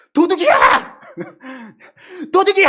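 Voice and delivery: screaming at full volume.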